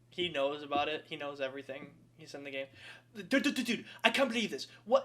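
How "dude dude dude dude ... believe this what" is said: excited, pitched-up streamer patter in put-on British accent. Imitating xQc finding out he is in the game: xQc impression in British accent. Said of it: "I just did a British accent".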